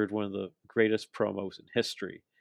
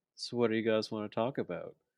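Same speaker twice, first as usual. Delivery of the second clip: soft, quiet, sly, coy understated delivery. Retelling what he said after the commercial break: imitating a quiet, coy delivery. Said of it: "he says it so quietly and so coyly".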